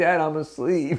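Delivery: put-on small child's voice, pitched high. Acting out a child woken for a guitar lecture: imitating Elijah. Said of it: "he's like".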